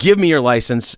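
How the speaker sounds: usual speaking voice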